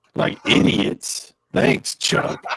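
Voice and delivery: distorted, crazy-sounding, garbled voice. Joking with other players while the mic garbles the voice: distorted, crazy-sounding voice. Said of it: "Your voice is all distorted and crazy".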